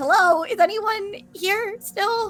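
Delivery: stretched, very high, drawn-out calling out. Playing a character who is trying to reach the others: yelling in character. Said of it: "and I'm just yelling".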